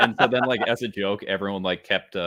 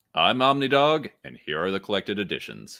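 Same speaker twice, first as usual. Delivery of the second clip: deep radio DJ announcer voice. Introducing a segment on the show, the host speaks; deep DJ voice. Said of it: "good deep DJ voice".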